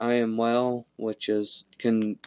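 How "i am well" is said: normal talking voice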